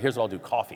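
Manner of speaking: normal talking voice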